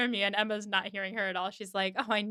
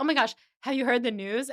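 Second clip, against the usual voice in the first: put-on excited man's voice, louder; 3 semitones higher, 5 dB louder than usual. Retelling a film scene where Mister Knightley bursts in: imitating an excited man. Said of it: "And he's so excited".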